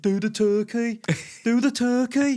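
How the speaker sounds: put-on daft, high, loud Birmingham accent shout. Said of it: "shouting in his daft Brummy accent".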